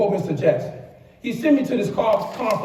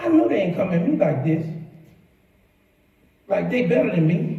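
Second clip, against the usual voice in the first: ordinary talk, nothing marked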